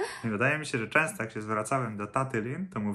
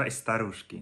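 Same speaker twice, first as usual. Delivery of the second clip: normal talking voice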